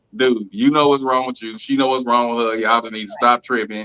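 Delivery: ordinary talk, nothing marked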